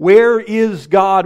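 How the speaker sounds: big, bold, booming, thundering preacher's voice. Storyteller acting out a preacher asking a boy a question, big booming bold voice. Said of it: "with a big, booming, bold voice".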